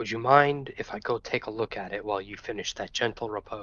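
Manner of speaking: quiet half-whispered voice. Asking the cleric in character whether to go take a look: half-whispering. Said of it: "I'll whisper back to my cleric".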